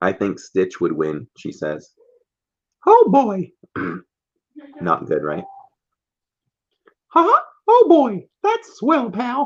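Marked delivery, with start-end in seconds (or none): 2.8-9.5 very high, swooping, sing-song falsetto. Co-host doing a Mickey voice before the trivia starts: falsetto Mickey Mouse voice. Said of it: "I don't think you got enough falsetto going there".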